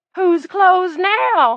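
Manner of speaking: put-on shrill, cracked, very high, booming old man shriek. Narrating an old man's cry after he fires at a door: high, cracked voice. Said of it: "the geezer cried in a high, cracked voice".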